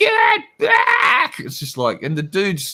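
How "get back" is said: put-on furious scream, very high. Retelling how a man screamed at someone pointing a gun to get back, retelling a scream. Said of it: "he's screaming out".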